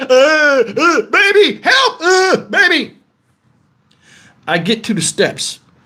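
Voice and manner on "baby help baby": very slow, high, scared, frightened crying voice. Retelling crawling on the floor after being stung, imitating a scared plea for help. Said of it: "I'm so scared my legs are paralyzed".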